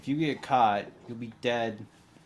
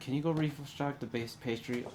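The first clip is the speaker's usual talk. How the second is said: soft, hushed half-whisper; 3 semitones higher, 5 dB quieter than usual. Speaker voices a woman as she half-whispers to a guard, half-whispering. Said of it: "She whispers to a guard".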